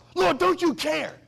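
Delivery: mock angry outburst, very high. Preacher retelling Martha's complaint to Jesus, mock-angry, as Martha. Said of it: "now she gets so mad".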